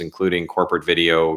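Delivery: ordinary delivery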